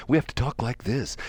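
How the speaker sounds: even, toned-down, calm, moderated, unexcited delivery. Describing how to talk in an interview, in a calm, moderated tone. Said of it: "We can't elevate our voices. We can't ever sound excited. We have to have a moderated tone to our voices".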